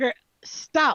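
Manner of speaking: sharp, loud, high, firm authoritative single word. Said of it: "she uses command".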